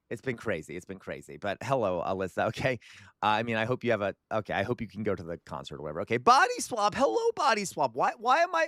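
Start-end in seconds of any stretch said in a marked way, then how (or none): 6.2-8.6 very high, cracking, breaking voice. Speaker greeting someone called body swap, voice cracking. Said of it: "Why is my voice cracking?".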